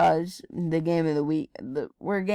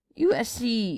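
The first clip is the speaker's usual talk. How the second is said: voice cracking on the words U S C; 6 semitones higher than usual. Making game picks out loud, the speaker's voice cracks on a team name. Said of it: "that was a big voice crack".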